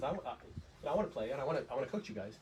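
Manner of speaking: ordinary talk, nothing marked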